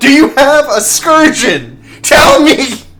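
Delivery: shrill, very high, loud shouting. Retelling what another man in the scene said, retelling a yell. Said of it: "he's like yelling".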